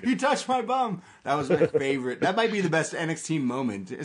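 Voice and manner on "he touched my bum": mock wrestler yell, higher pitched. Retelling a favourite moment of Bo Dallas yelling: imitating Bo Dallas yelling. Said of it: "Bo Dallas yelling".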